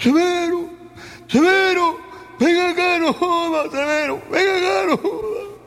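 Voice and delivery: enraged, very high-pitched, furious shouting. A man arrives at his neighbor's house and starts shouting for him. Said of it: "empezó a gritar".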